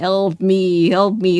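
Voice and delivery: very slow, twisted, warped, creepy human voice. Describing a mutated bear that mimics its victims' last words, warped, messed-up human voice. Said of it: "like a human warped up, fucked up voice".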